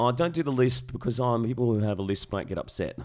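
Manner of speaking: plain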